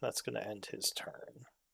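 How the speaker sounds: ordinary talk, nothing marked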